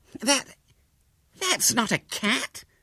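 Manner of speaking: very high, very slow, drawn-out gasped words. Hubert Lane reacts as William sits among the competitors with his exhibit, gasping. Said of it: "gasped Hubert Lane".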